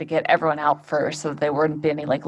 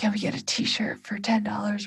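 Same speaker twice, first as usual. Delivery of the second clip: soft, hushed, pitched-up stage whisper; 5 semitones higher, 6 dB quieter than usual. Retelling someone asking to buy a t-shirt while paramedics were there: imitating a whisper.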